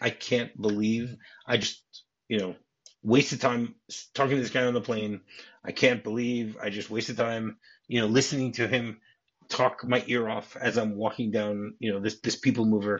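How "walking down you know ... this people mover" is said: normal talking voice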